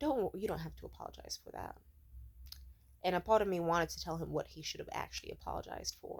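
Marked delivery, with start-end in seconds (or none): 0.0-1.8 much quieter voice. Speaker recounts answering his apology, retelling a quiet reply. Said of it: "I just quietly was like".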